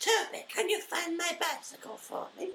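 put-on woman's voice, soft and hushed. Asked to do an impression of her right now, imitating a woman. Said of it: "Can you do an impression of her now?".

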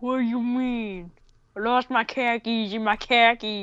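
horrible, bad put-on New Jersey accent. Asked to go back to the New Jersey accent, doing a bad New Jersey accent. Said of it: "go back to my New Jersey accent again?".

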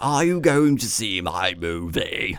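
bad put-on voice, every word dragged out slowly. Discussing a Hitchcock film, speaker imitates the actor: bad Anthony Hopkins impression. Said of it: "That's basically what he sounded like".

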